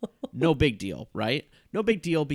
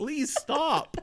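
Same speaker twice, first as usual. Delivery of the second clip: acted pleading, higher; 12 semitones higher than usual. Retelling being hit in an acting scene: imitating own genuine pleading. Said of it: "it just becomes genuine of me being like".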